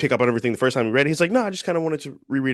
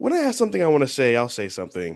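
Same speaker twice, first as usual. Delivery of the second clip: normal talking voice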